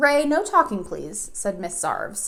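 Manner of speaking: ordinary delivery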